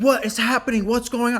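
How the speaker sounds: shrill, very high, loud frantic screaming. Retelling waking after a car crash, a woman at the window: imitating a woman screaming. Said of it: "This woman is outside my window screaming".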